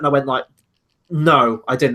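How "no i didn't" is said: very angry, blunt, openly angry delivery. Retelling answering a cinema usher who asked about the movie: retelling own angry reply. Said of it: "And I sounded very just angry about it".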